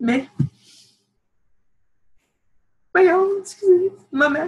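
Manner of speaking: high, teary voice, on the verge of tears. Addressing their mother directly, teary. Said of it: "j'ai les larmes aux yeux".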